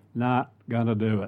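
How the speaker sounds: terrible put-on Texas accent. Briefly imitating someone in a quick bit, bad Texas accent. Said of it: "Kind of imitating someone there. But anyway, supposed to be a Texas accent".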